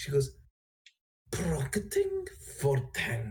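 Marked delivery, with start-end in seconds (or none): 1.3-3.3 rough, gravelly, female-sounding dragon voice. Recalling what she said, attempting a female-esque voice, in a gravelly voice. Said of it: "I can only do it in a gravelly voice".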